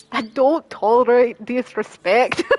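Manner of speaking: bad dramatic put-on Irish accent. Doing a voice for the others, bad dramatic Irish accent. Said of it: "That was the worst accent I just did ever".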